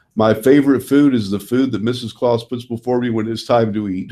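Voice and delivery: ordinary talk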